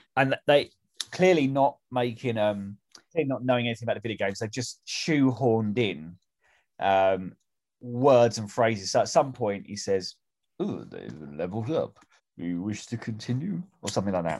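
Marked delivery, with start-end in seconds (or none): 10.6-13.7 lilting, swooping, animated royal-tinged voice, pitch up and down. Quoting a line from the film: almost Prince Charles impression. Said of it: "that's almost, uh, Prince Charles".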